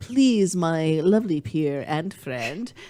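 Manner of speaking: put-on, fake English accent. Addressing a fellow speaker mid-conversation, in a put-on English accent. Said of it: "I only say those in an English accent".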